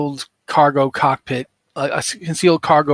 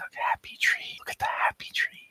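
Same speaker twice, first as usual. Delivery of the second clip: whispered, gently soothing, slightly pretentious voice. Voicing a man in a video painting trees: soothing whisper. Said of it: "but he's whispering".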